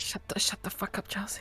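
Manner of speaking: loud stage whisper. Telling another player to shut up: loud whispering. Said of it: "Stage whisper".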